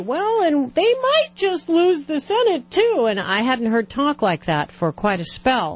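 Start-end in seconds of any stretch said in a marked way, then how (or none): 0.0-3.1 high, slow, drawling mock pundit voice. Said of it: "the pundits are ... beginning to say".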